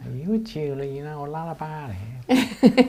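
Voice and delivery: very bad put-on American woman's accent. Retelling an American woman approaching during a gemology lesson: bad American woman's accent. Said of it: "That's the worst accent I've ever heard".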